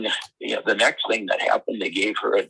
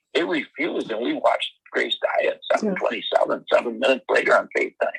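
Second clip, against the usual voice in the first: ordinary delivery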